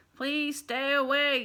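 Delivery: loud, robotic machine voice. Reading a story aloud, the narrator gives the robot's line in a robot voice. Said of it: "said the robot".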